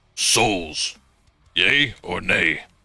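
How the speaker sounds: metallic, inhuman golem-like voice. Game master voicing a golem as its eyes illuminate, metallic voice. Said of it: "you hear a metallic voice say".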